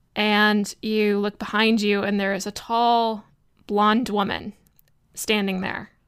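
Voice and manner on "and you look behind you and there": ordinary delivery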